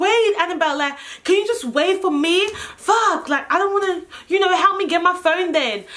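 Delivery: high, edgy, anxious, impatient pleading, acted. Retelling what they told Annabelle while the police were coming, retelling an anxious plea. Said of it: "I'm getting all anxious and shit".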